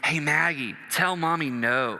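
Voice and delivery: whispered voice. Retelling a daughter urging her sister to refuse dinner: imitating Allie Kate whispering.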